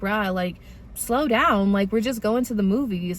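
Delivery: ordinary talk, nothing marked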